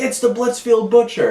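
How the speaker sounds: put-on very high, terrified, panicked crowd shriek. Retelling how people react to the killer: imitating people screaming. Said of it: "people are screaming like".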